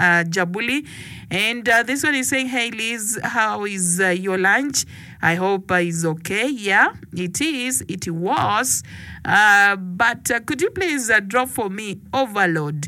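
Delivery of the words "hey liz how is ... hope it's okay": ordinary delivery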